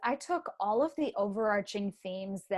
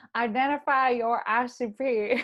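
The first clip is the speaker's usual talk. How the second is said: loud, very slow put-on country drawl; 3 semitones higher, 5 dB louder than usual. Answering the audience's request to hear a country accent: put-on country accent. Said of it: "to hear your country accent".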